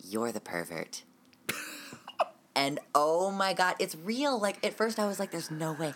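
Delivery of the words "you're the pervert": hushed, low, soft half-whisper. Retelling what a woman said on a hot mic, imitating her half-whisper. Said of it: "she whispers".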